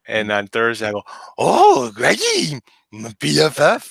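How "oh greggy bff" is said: swooping, sing-song, high-pitched cartoon dog voice. Parent retelling how they greet their son on Thursdays, Scooby-Doo voice. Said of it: "I can do a good Scooby".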